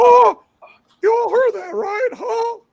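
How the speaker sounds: very high, loud, squeaky voice. Acting out Morpheus's reply after a woman's threat to kill him, in a Mickey Mouse voice. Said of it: "Morpheus sounds like Mickey Mouse when she's talking".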